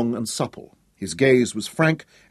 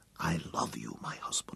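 breathy, very soft whisper; 10 semitones lower, 17 dB quieter than usual. A wife speaks into her husband's ear: whispering. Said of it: "she whispered in his ear".

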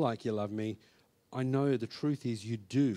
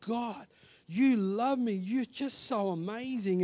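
put-on sobbing, high, tearful yelling; 9 semitones higher than usual. Retelling a moment of sudden realization, retelling own shouting while crying. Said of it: "I was now shouting and I was yelling and I was crying".

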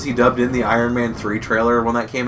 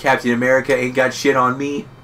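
normal talking voice

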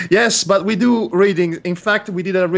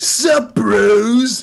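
put-on cartoon character voice, stretching out "bros"; 4 semitones higher, 3 dB louder than usual. Recounting voicing Hobbes like a cartoon character: Muscle Man voice. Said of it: "I did the voice of Hobbes as if he were the muscle man from Regular Show. So I was like".

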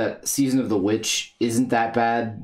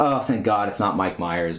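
ordinary talk, nothing marked

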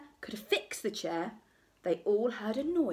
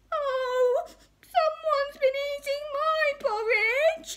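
very high, loud, drawn-out cry; 6 dB louder than usual. Narrator reads the three bears finding their porridge eaten, Baby Bear crying out. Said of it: "cried Baby Bear".

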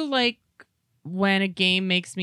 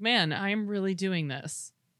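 ordinary delivery

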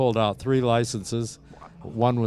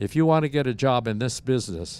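ordinary delivery

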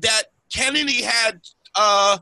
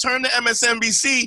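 plain

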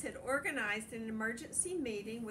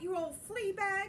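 high, squeaky little mouse commander voice; 9 semitones higher, 4 dB louder than usual. The mouse commander confronts the monstrous dog, squeaky Big Cheese voice. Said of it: "squeaked the Big Cheese".

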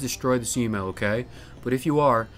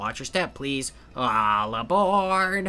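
poor put-on toad voice. Voicing a toad train conductor who has just checked a ticket, terrible toad voice. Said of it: "terrible toad voice".

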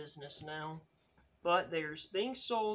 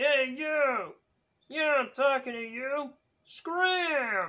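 barked sharply, with "scram" drawn out; 8 semitones higher, 8 dB louder than usual. Puppeteer introducing a Sesame Street puppet, in an Oscar the Grouch voice. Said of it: "the crabby guy who lives in a garbage can".

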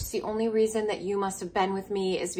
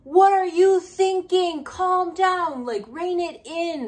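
mock commanding, very high, drawn-out yell; 10 semitones higher, 4 dB louder than usual. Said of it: "especially yelling it at you".

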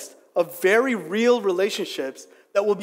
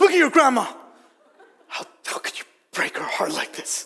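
angry, reproachful fatherly scolding tone. Retelling how his dad scolded him for shaving his head: imitating an angry dad. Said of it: "my dad in his anger is like".

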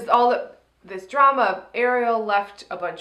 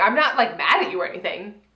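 acted angry, plainly mad, cross tone; 3 semitones lower than usual. Retelling what an angry contestant keeps saying: imitating an angry tone. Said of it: "in that tone".

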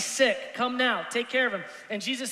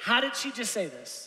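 ordinary talk

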